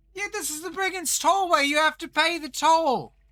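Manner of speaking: very high, shrill, loud shouting. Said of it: "they're yelling loudly at you".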